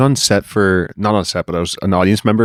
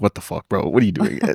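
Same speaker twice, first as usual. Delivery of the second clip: put-on sarcastic game show host voice, quieter; 5 dB quieter than usual. Retelling a game show host's reaction to a contestant's dance: imitating Jerry D being sarcastic. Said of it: "He's way more sarcastic".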